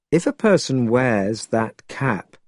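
ordinary delivery

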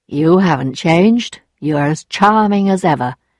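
ordinary delivery, nothing marked

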